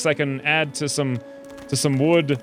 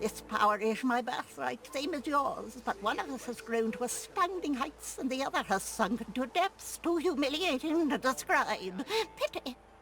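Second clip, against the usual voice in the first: throaty, gargling crab voice, much higher, quieter; 9 semitones higher, 12 dB quieter than usual. A crab answers when asked how it has source powers: throaty gargling crab voice. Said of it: "this voice acting is sublime ... her throat ... make this, like, gargle noise".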